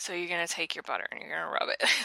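mock-deadpan delivery. Recounting a scene, the speaker quotes the waiters: imitating deadpan waiters. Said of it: "just deadpan".

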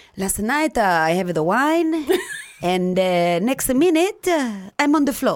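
put-on Italian accent. Retelling what an italian man in the emergency room said, italian accent. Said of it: "he was Italian and he has had a spoke with an accent".

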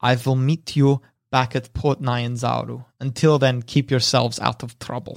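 partly whispered voice. Voicing a departing character who speaks to the party: half whispering. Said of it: "half whispers".

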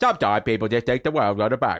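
put-on British accent voice. Doing an impression after being asked, Michael Caine impression. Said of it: "my Michael Caine impression".

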